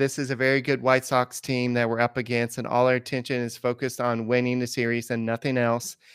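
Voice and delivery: plain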